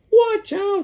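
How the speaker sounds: very high parrot squawk. The parrot squawks a warning to the chimpanzee. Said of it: "squawked the parrot".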